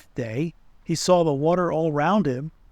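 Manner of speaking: ordinary delivery, nothing marked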